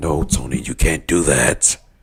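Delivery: mock growling voice, deep. Retelling a man refusing Tony, imitating a growling voice. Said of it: "got like a growl in his voice".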